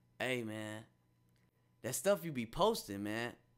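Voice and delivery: hushed voice. Retelling how old friends talk about the posts: imitating a hushed voice. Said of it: "their voice get little".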